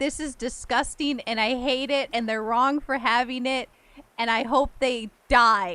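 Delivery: ordinary talk, nothing marked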